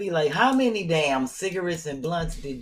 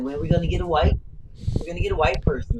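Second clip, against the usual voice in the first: usual speaking voice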